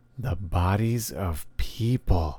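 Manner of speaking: ghostly, spooky, eerie voice. He answers the narrator's question, in a spooky voice. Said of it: "he says in a spooky voice".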